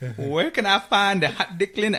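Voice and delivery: very high-pitched put-on Vietnamese accent. Retelling a man who came up and asked a question, the speaker imitates a Vietnamese accent. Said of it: "I try to do the Vietnamese accent".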